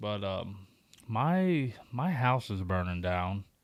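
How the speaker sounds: slow, play-acted casual, offhand, nonchalant delivery. Retelling a coworker's phone call about his house fire: imitating a nonchalant tone. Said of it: "just, like, real nonchalant".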